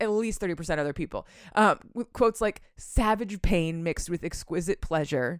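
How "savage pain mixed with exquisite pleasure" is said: ordinary delivery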